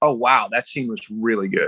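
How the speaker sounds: usual speaking voice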